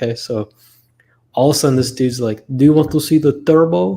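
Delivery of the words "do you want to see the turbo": put-on Bulgarian accent, higher and louder. Retelling what a used-car seller said on a test drive: imitating a Bulgarian accent. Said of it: "the guy spoke very Bulgarian".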